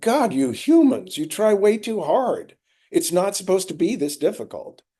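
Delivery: mock exasperated, high, fed-up voice. Retelling a voice heard inside one night, imitating an exasperated voice. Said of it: "this exasperated voice in me saying".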